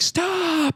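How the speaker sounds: very high-pitched scream. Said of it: "three in the morning screaming, like".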